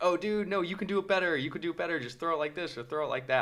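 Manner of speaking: put-on eager teen gamer voice, high and shouted. Retelling what young players in online games scream: imitating kids screaming encouragement. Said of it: "they're screaming, like, very nice things".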